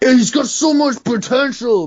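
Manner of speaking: mock pundit voice, high and loud hype.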